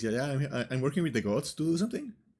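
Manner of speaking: put-on, super innocent, guileless tone. Retelling how Mel answers another character's question, mock-innocent Mel voice. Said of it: "super innocent goes".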